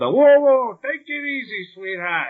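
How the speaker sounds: put-on thick, laid-on New York accent, pitched high. Praising the Penguin's character in the movie, quoting his line in a thick New York accent. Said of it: "that very thick New York accent".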